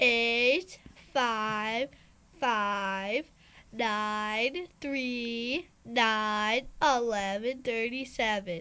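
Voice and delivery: spoken slowly. Reading out a phone number again after being asked: slowly.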